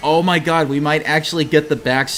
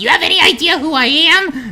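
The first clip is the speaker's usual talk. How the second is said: tiny, very high, squeaky little voice; 6 dB louder than usual. Retelling what a man said after losing his piano privileges: tiny mini voice. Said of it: "in like in a mini voice".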